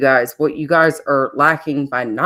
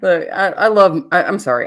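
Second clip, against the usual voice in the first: ordinary delivery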